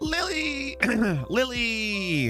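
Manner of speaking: strained voice. Calling out to Lily, strained voice. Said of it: "My voice is like super strained there".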